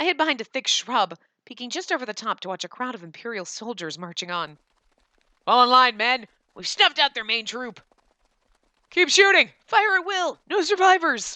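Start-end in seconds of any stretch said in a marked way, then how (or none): 5.5-11.4 high, loud, dopey, dim-witted soldier voice. Narrating a story, voicing the Imperial soldiers' orders in a dumb soldier voice. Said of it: "I don't know why I give them dumb voices".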